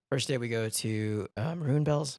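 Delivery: voice cracking and breaking mid-phrase. Telling about a group cabin trip to Maroon Bells, voice cracking. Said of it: "my voice is cracking".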